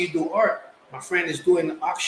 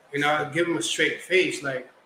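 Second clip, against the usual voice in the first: plain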